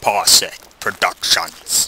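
put-on low, sinister evil villain voice. Starting to play Slender, reading a title aloud in a mock evil voice. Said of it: "I read that in evil voice".

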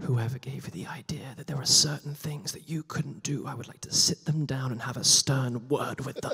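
hushed, very quiet voice spoken up close. Retelling how a director then came up close: imitating someone speaking very quietly. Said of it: "he comes up to me very quietly".

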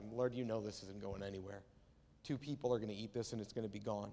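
low, totally sarcastic tone. Retelling a man's reply to Jesus, retelling a sarcastic remark. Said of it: "but it's in total sarcasm".

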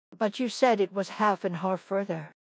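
usual speaking voice

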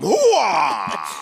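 put-on gruff movie-star voice. Shouting catchphrases while asked about the family: Al Pacino voice. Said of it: "That's Al Pacino!".

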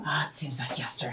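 tearful whisper, fast and breathy.

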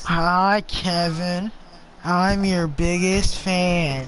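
cartoon character voice. Recording a greeting for Kevin, asked to say it again: SpongeBob voice. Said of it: "in the SpongeBob voice".

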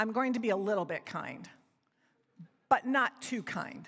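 put-on, very serious, mock-serious little-boy voice. Retelling what Liam said from the back seat, in Liam's really serious voice. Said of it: "in a really serious voice".

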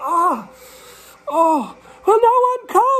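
very high, very slow, drawn-out rising yell. Peter, alone in the cold dark with no one coming to help, yelling. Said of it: "he yelled".

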